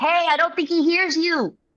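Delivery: very high, shouted yelling call. Playing a character who yells toward a creature: yelling in character. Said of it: "it's just yelling".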